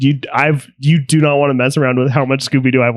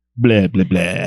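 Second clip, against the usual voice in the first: low-pitched bad vampire accent; 6 semitones lower than usual. Redoing a Hotel Transylvania quote in a quiz, in a Dracula accent. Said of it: "That wasn't a very good accent, though".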